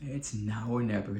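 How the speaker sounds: usual speaking voice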